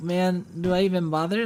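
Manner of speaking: ordinary talk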